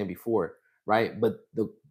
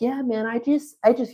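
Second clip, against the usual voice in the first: put-on very high-pitched, boyish young kid voice; 13 semitones higher than usual. Retelling what a young boy said to the speaker, imitating a high-pitched kid. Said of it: "he had a very high pitch".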